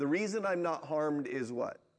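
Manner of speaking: ordinary delivery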